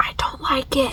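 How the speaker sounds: soft, unvoiced whispered aside.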